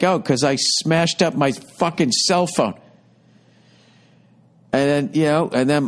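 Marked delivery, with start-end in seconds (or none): none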